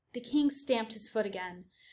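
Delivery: ordinary delivery, nothing marked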